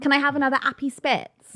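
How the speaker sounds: put-on high-pitched girl voice. Showing a friend how all of the girls talk, imitating how the girls talk. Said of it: "all of the girls sort of talk like this".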